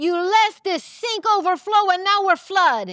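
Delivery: put-on speaking with an Italian accent. Acting out an improv scene scolding a student over a flood: italian accent. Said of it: "It sounded like an Italian accent".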